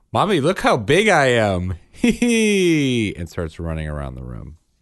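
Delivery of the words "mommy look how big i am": put-on high-pitched small child's voice. Retelling a Freaky Friday hypothetical where someone walks out doing a Bryn voice. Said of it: "in a Bryn voice says".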